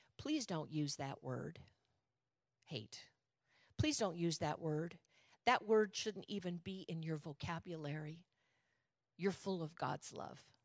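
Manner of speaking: loving, caring, compassionate, concerned tone. Retelling what an elder said after a careless remark: imitating compassionate concern. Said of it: "with the most compassion and love and concern".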